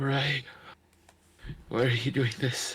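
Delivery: winded, panting, heaving for air. Voicing a character heard after a fireball fades: panting Shro voice. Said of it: "panting and Shro's, Shro's voice".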